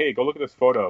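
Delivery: ordinary talk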